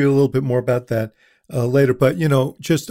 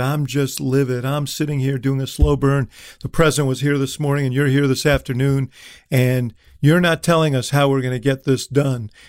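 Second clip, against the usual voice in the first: usual speaking voice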